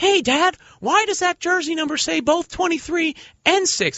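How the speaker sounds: squeaky cartoon mouse voice, pitched way up. Imagining his kid asking his dad about a hanging jersey, Mickey Mouse voice. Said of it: "my kid talks like Mickey Mouse".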